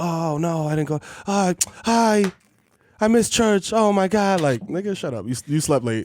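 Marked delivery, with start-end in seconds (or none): 0.0-4.4 very slow, drawn-out, insincere fake "sorry". Imitating mom fronting about missing church: imitating mom's fake sorry tone. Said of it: "Fake, fake, fake sorry".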